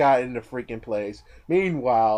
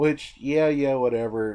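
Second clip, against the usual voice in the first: usual speaking voice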